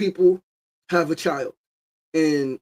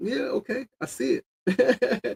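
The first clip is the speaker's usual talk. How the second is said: easy, amused laughing, high, very slow, drawn-out; 7 semitones higher, 5 dB quieter than usual. Retelling a reaction to people who copied ideas: imitating own smiling laughing reply. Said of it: "And I just smile and laugh".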